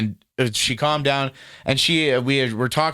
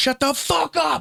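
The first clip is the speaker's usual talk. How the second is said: play-acted, rough, raw, ragged, very high scream. Telling a friend what someone yelled at another person during a row. imitating someone screaming. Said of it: "and just started screaming like that".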